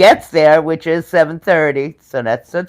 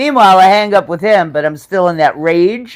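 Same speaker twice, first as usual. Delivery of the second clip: normal talking voice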